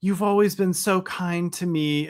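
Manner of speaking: high, sarcastic tone, plainly not meaning it. Recount a clip of Kathie Lee speaking at Howard's sixtieth, imitating a sarcastic Kathie Lee.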